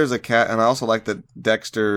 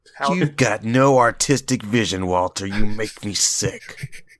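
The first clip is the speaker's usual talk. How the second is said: heated, disgusted, angry scolding voice. Speaking to Walter as Mike would, imitating Mike's angry voice. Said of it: "I was trying to do his angry voice".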